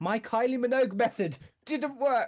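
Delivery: put-on furious voice. Retelling failing a timing game, imitating own past fury. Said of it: "I was so furious".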